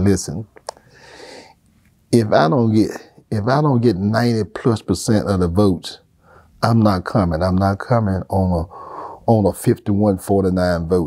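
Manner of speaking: usual speaking voice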